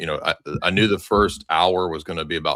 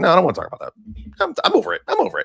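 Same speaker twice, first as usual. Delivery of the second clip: put-on voice, very high, rough, creaky, swooping; 13 semitones higher than usual. Retelling a breakfast conversation, imitating Tucker Carlson. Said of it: "you do a really good Tucker im-".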